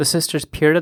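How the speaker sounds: plain reading voice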